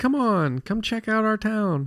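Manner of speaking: tiny, sweet, very high cute alien squeak. Retelling a game scene, voicing the little cute alien greeting you. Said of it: "this little cute alien".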